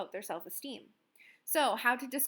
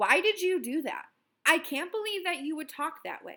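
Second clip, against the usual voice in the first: harsh, reproachful angry scolding, loud and high; 5 semitones higher, 7 dB louder than usual. Showing how a change of tone is heard, angry scolding tone. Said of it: "if I change my tone to".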